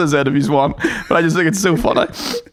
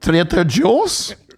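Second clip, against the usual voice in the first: put-on Scottish accent. Retelling saying business names on the street: Scottish accent. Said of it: "saying business names in a Scottish accent".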